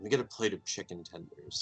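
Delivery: low, hushed, secretive half-whisper, close and intimate. Leaning in to the barkeep to order quietly: half-whisper. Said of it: "lean in and whisper".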